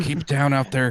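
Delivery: loud, high-pitched stage whisper. Player says what the character calls to those outside, in a loud whisper. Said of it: "I'll say in a loud whisper".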